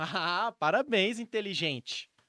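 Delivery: booming, very loud, heavy sarcasm. Giving an example of reacting to someone breaking a plate, sarcastic. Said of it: "claramente você eu tô sendo sarcástico".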